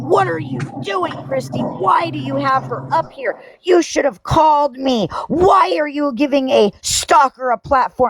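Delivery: play-acted, very high, shrill yelling and screaming. Retelling how a woman screamed questions at her: imitating someone screaming. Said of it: "she was screaming and yelling at me".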